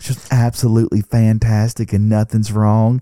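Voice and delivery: loud, eerie, creepy put-on Southern accent. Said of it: "creepy Southern voice".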